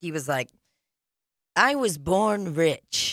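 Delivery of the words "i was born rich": slow, deliberate delivery, word by word. Imitating an acquaintance who sounds like Trump: Trump impression. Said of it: "let me get in my Trump zone".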